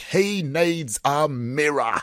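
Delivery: very slow, high put-on Australian accent. Quoting one of the best lines, in an imitated Australian accent. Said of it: "and I'll do my Australian accent".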